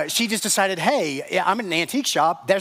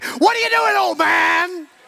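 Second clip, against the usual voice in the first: acted very high, shrill, drawn-out scream with rough edge; 12 semitones higher, 5 dB louder than usual. Retelling a daughter bursting out of the closet: imitating someone screaming. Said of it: "swung the door open as fast as she could and screamed".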